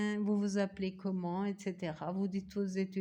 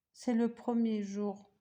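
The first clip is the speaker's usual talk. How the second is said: ordinary talk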